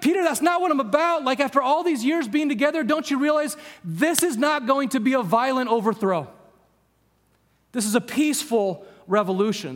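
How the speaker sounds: put-on exasperated, frustrated tone. Retelling Jesus rebuking Peter over the sword: acting out frustrated Jesus. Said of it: "he would have been frustrated with Peter".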